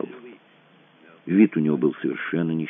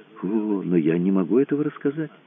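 plain reading voice

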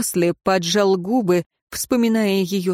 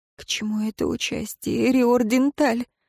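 trembling, quivering, shaky voice; 4 semitones higher than usual. Reading a prisoner's question to the councillor: trembling voice. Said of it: "дрожащим голосом спросила она".

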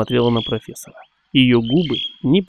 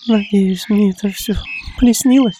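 quivering, trembling, very high voice; 9 semitones higher than usual. Nancy, pressed close to the professor, speaks in a trembling half-whisper. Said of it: "дрожащим голосом прошептала Нэнси".

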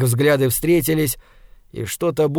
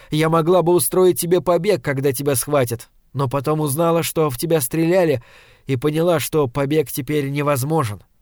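ordinary delivery

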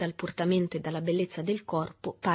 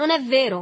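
furious, violent, shrill, very loud and high; 7 semitones higher, 9 dB louder than usual. Berto answers an accusation with equal violence. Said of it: "rispose Berto con uguale violenza".

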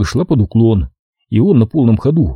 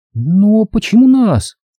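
very high-pitched, frightened, scared outcry; 10 semitones higher than usual. A narrator reads Cynthia's question to her mother, a frightened exclamation. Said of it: "испуганно воскликнула Синтия".

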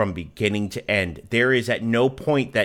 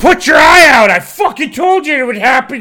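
put-on shrill, very high, very loud drunken bellow; 14 dB louder than usual. Act out a man yelling at the corpse of a dead kid, imitating a drunk man yelling. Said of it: "really drunk and just like yelling at".

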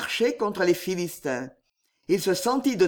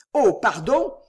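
feigned, put-on, fake surprise; 3 semitones higher, 4 dB louder than usual. A man enters and pretends only now to notice Dassas: feigned surprise. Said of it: "ajouta-t-il en feignant d'apercevoir Dassas".

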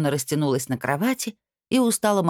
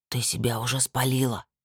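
quiet, soft, much lower pitch; 4 semitones lower, 4 dB quieter than usual. Barmasur answers the narrator's whispered question, replying just as quietly. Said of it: "так же тихо ответил он".

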